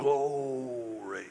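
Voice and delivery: stretched, drawn-out southern drawl on "glory". Imitating old churchgoers responding to preaching: drawn-out southern brogue. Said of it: "drag it out in that southern brogue".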